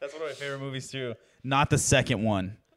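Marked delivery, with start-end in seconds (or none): 1.4-2.5 loud, stern, firm dad voice. On a podcast, adding a remark to the co-hosts in a dad voice. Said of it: "Don't use your dad voice on the podcast".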